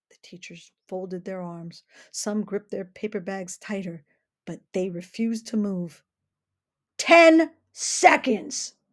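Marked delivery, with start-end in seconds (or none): 6.9-8.7 very loud, high, shrill full-volume shout. A sheriff warns teachers refusing to leave the courthouse steps, yelling. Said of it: "yelled the sheriff".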